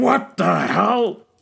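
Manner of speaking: very loud, rough, booming shout. Voicing Jared, who walks into his bar and sees trouble: booming voice. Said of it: "there's this booming voice that says".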